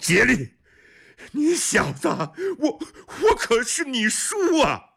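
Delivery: struggling yell, very high, slow, drawn-out. Seized by guards, Gelun shouts to Jieli while struggling. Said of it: "一边挣扎一边大叫".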